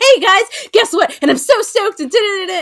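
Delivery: very high, very loud, over-excited hyped babble. Teasing the other speaker by imitating them: imitating someone overly excited. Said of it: "You're like".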